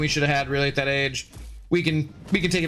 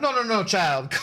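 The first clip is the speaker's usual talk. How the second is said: bad, weak put-on Jamaican accent, pitched up; 6 semitones higher than usual. Retelling what a massage therapist said to them: bad Jamaican accent. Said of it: "I can't do good Jamaican".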